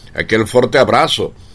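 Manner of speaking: ordinary talk, nothing marked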